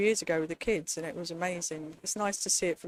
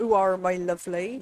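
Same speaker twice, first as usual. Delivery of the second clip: imitated woman's voice with an English accent; 6 dB louder than usual. Greeting Carly, the speaker imitates her West Country accent. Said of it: "West Country accent".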